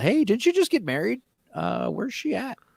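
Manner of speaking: acted, very high, sing-song passive-aggressive tone. Speaker acts out quizzing a newlywed about where she is; mock passive-aggressive. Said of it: "say it in like a passive aggressive way".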